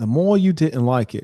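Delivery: slow, drawn-out delivery, each word stretched out. Showing how the real voice in the voice memo sounds: imitating Andrew Tate's voice. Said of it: "His voice like".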